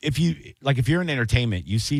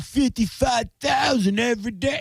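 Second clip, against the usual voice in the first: put-on obnoxious taunting voice, higher; 12 semitones higher than usual. Retelling a stadium heckle: imitating an obnoxious heckler. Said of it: "this guy was, like, being real obnoxious behind me. He's like".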